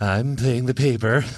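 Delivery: slow, drawn-out deathbed voice, each word dragged. Repeating the joke when asked: Ronald Reagan on his deathbed. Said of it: "like Ronald Reagan on his deathbed".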